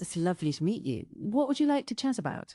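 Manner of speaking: standard British English accent, plain speaking. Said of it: "British milf voice".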